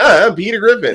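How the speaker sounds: very high, whiny, almost crying voice. Retelling a Family Guy episode, whiny Peter Griffin voice. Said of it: "the whiny".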